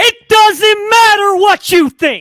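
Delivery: high-pitched yell at full volume. Asked for thoughts to finish the conversation, offer a quick The Rock impression to Felix Sharp. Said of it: "That's what The Rock would say to you".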